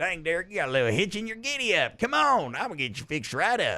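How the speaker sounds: cartoonish voice with wide pitch swings. Imagining Tow Mater on the sideline talking to Derek: Tow Mater voice. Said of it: "Is that an okay Tow Mater?".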